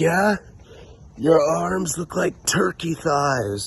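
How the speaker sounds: play-acted, very high-pitched, shouted yelling. Sitting beside a highway, retelling roasting two people, retelling yelling a roast. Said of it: "I'm just yelling at both of them".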